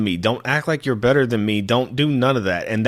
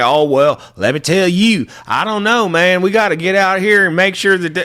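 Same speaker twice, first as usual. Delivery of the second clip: exaggerated fake Texas drawl; 7 semitones higher, 6 dB louder than usual. Mocking callers who expect a Texan to sound a certain way: stereotyped Texan accent. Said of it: "The fuck am I supposed to sound like?".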